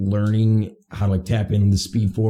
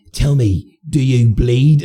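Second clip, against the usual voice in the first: put-on very slow, deliberate, loud, drawn-out British accent; 4 semitones higher, 6 dB louder than usual. Quoting a movie line to friends, noting the actor's accent: British-accented Superman impression. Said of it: "his accent comes out and he goes".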